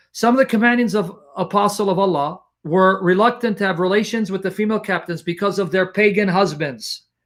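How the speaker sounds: ordinary delivery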